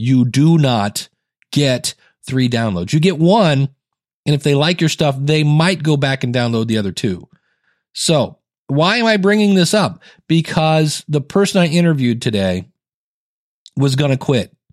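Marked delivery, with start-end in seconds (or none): 0.0-2.9 slow, deliberate, each word carefully spaced out. Repeating an explanation a second time for listeners, said again slower. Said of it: "I will say that again slower".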